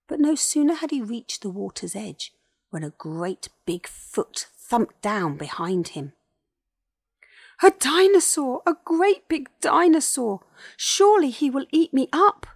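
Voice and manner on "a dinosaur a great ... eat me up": very high, very loud, shrill, frightened yell. A great big dinosaur thumps down behind him at the water's edge, frightened yell. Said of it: "Yelled Colin".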